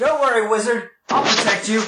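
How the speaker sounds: high, shouted call. Voicing a character who shouts to a wizard: shouting. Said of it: "He shouts".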